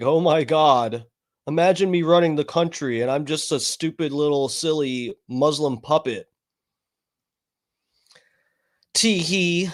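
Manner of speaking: normal talking voice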